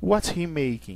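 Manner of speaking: pitch drops at the end of making. Teaching english question intonation, falling pitch on making. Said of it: "o final ele baixa".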